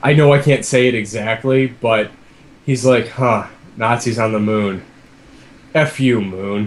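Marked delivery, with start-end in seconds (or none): 3.1-6.7 put-on dry, flat, matter-of-fact deadpan. Retelling a favorite one-liner from a game character: imitating a deadpan delivery. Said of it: "so matter of fact".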